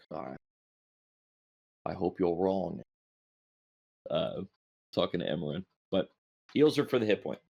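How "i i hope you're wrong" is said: quiet muttering under the breath. Voicing a character speaking under his breath: muttered under his breath. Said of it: "under his breath is like".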